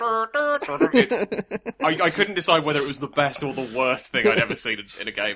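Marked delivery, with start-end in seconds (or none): 0.0-0.9 very high imitation of a car horn tooting a tune. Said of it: "You can do La Cucaracha".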